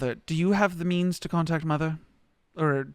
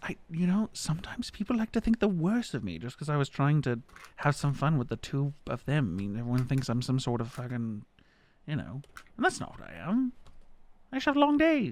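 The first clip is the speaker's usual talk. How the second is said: half-whisper, barely audible throughout; 4 dB quieter than usual. Voicing a character who half-whispers to another character: half-whispering character. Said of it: "she just whispers".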